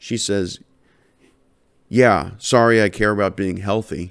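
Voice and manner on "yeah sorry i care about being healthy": mimicked tone full of attitude. Retelling what she said about caring for health: imitating someone with an attitude. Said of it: "With an attitude".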